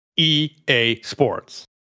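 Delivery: put-on harsh announcer voice, American accent. Friends trading impressions, doing the EA Sports announcer voice. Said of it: "add that harsh American accent".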